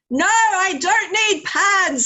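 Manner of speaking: loud, high, drawn-out shout at the top of her voice. Retelling her daughter's answer in the supermarket, imitating her daughter shouting. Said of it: "at the top of her voice".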